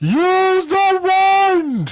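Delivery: very high shriek with the word wand drawn out. Narrating a scene, voicing Scar as he screams from the top of the statue. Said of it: "and he screams".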